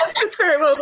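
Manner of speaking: high, loud laughing through words.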